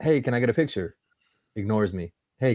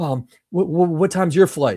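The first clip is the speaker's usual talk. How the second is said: mock frantic woman's voice, higher pitch; 7 semitones higher, 3 dB louder than usual. Retelling how a lady at the airport line asked: imitating a frantic woman. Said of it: "Some lady comes up frantic to me".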